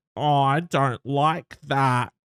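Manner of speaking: irritating put-on voice, very slow and drawn out. Showing how to answer someone mean: really annoying voice. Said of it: "in a really annoying voice".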